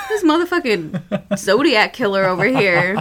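ordinary talk, nothing marked

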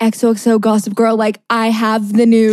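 ordinary delivery

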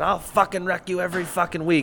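acted full-on yelling. Retelling how a dad yelled at another competitor after a race: retelling a yell. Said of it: "your dad went down and was yelling at the guy".

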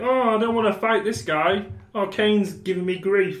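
high-pitched cartoon frog-puppet voice. Imitating a wrestler who doesn't want to fight: Kermit the Frog voice. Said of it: "He sounds like Kermit the Frog".

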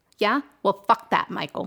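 seething, hostile, very angry, furious tone. Cursing back at an old man who scolded the swearing, very angry. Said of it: "You sound angry, [name]. Very angry".

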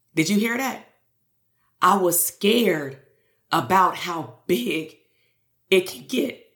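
tearful, choked with tears, crying through it. Speaker shares an insight from this morning's meditation, crying. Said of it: "I don't even know why I'm crying right now".

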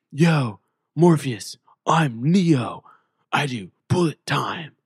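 dragged out slowly and badly. Pretending to be Neo for fun: Keanu Reeves impression. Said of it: "I'm gonna butcher it again".

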